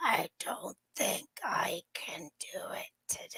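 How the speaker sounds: mock sickly voice, barely a whisper. Retelling a morning phone call from a co-host, imitating Julia sounding sick. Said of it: "from Seek Chick Julia like this".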